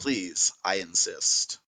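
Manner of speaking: very smug, hushed, breathy near-whisper. Voicing a character handing over a payment bag: smug. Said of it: "very, very smugly says".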